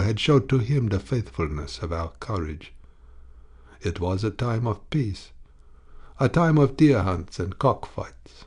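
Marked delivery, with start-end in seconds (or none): none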